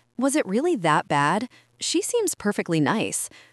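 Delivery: plain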